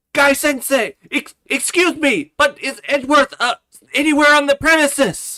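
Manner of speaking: put-on eager anime character voice. Voicing a game character who asks for Edgeworth: Rock Lee impersonation. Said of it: "let's see how well I can do a Rock Lee impersonation".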